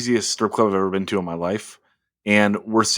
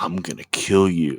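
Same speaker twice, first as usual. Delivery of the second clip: whispered, lower; 3 semitones lower than usual. Telling the group how a stranger whispered in a man's ear, retelling a whisper. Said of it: "whispers in his ear".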